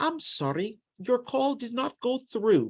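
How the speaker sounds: put-on British accent. Retelling someone's reply when asked to write his name, in a British accent. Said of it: "in a British accent".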